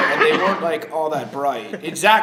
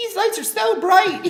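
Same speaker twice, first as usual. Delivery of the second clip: very high-pitched, lightened-up voice. Showing how Zach talks in their mind: imitating Zach. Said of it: "in my mind, Zach talk, it's more like".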